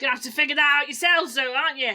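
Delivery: terrible put-on Cockney accent. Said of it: "I did tell you my accent was terrible".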